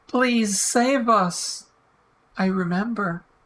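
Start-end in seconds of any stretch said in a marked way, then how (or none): 0.1-1.6 earnest, begging, pleading tone. Retelling what Sarah said back in the winner's room: imitating someone begging. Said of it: "Sarah begged him".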